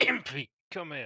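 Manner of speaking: quiet mutter under the breath. Turning to survey the bar, calling a companion over: muttered under breath. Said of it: "cough under my breath".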